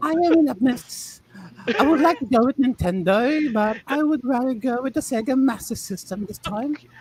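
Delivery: terrible fake British accent. Joking about a household gaming console: terrible british accent. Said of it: "That is a terrible British accent".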